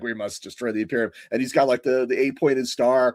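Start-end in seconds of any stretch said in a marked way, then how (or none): 0.0-1.1 robot warlord villain voice. Imagining a corrupted Megatron giving orders: Megatron voice. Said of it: "Megatron's up there like".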